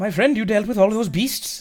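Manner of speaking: put-on Welsh valleys accent. Voicing a friend character who pops out of the ground after hiding, Welsh accent. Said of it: "She's Welsh".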